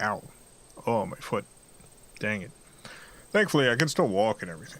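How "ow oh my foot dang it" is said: whispered, small, wincing, pained "ow". Retelling how a sore foot feels when moved: imitating own pained reaction. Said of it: "and it's like".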